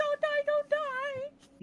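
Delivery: very high, tearful crying, "die" drawn out. Narrating a revival scene, voicing Tinu over the revived character, crying while pleading. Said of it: "She's crying".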